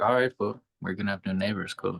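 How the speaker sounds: ordinary delivery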